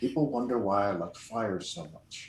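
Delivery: soft, low, grumbled mutter under the breath. Voicing a character as another is swallowed by a flytrap: muttered under his breath. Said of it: "Under his breath".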